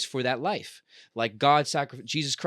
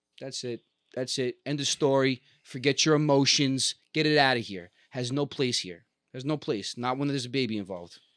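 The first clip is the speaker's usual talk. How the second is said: ordinary talk, nothing marked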